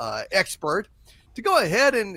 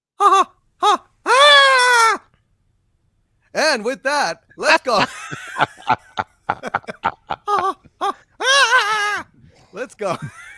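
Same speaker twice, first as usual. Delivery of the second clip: high, loud and wild voice; 9 dB louder than usual. Opening on a happy note for the audience, do Mickey Mouse on crack impression. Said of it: "Here is Mickey Mouse on crack".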